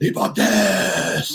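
rough, high, creaky crazy voice, "death" drawn out. Recalling how Glenn greeted visiting band members backstage, Glenn's crazy voice. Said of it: "say a crazy voice".

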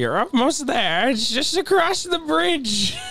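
put-on high-pitched old woman voice. Playing an old woman giving directions in a scene, in a Gilbert Gottfried voice. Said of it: "Gilbert Gottfried is the old woman".

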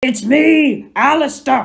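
muffled shouting, high and loud.

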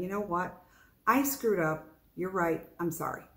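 ordinary talk, nothing marked

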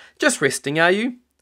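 friendly, chirpy tone. Narrator reading a shop assistant greeting Grandpa, cheery. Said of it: "she asked cheerily".

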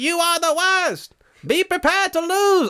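slow, deliberate, high-pitched taunting, boastful voice. Retelling a boxer taunting his rival outside his house: Muhammad Ali taunting voice. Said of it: "you know how he talked back then?".

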